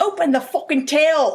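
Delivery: put-on Irish accent. Retelling what a man with a needle said to him, in an Irish accent. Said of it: "What was my Irish accent?".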